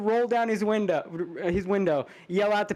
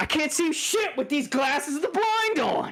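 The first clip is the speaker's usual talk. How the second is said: acted, high, irritated, fed-up griping; 7 semitones higher than usual. Retelling what he would say in public in joke glasses, mock-angry. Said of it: "he would just get mad".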